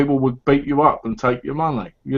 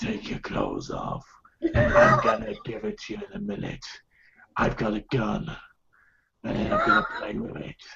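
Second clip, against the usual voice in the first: hushed, whispered East End gangster voice; 4 semitones higher, 10 dB quieter than usual. Show the others how you talk in the bedroom with Donna, an East End gangster impression. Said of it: "it's the East End gangster impression".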